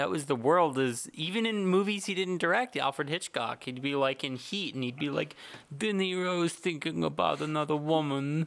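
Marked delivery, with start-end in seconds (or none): 5.8-8.5 utterly worn-out, very tired, mournful voice. Imitating a director stepping out mid-film to explain: Alfred Hitchcock impression. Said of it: "It's my Hitchcock impression".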